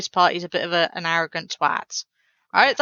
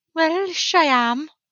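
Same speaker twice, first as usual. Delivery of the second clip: mock Welsh accent, much higher pitch; 10 semitones higher than usual. An english speaker teasing a welsh person, in a mock welsh accent. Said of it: "I don't mean to mock the Welsh accent".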